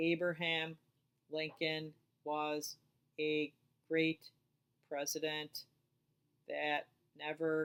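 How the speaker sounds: halting, one word at a time, very slow. Showing choppy reading to mark on a sheet, choppy, word-by-word reading. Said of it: "that's choppy".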